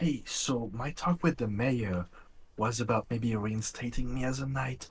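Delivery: loud, indiscreet stage whisper. In the scene, the character leans in to whisper in someone's ear: loud, indiscreet whisper. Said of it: "totally not discreetly just whisper in Leaf's ear".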